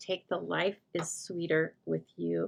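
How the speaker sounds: ordinary talk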